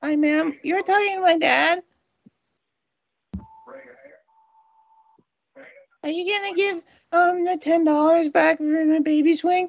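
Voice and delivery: put-on creepy, eerie child voice. On a phone call to a lady, speaking in a creepy kid voice. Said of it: "She got scared talking to the creepy kid".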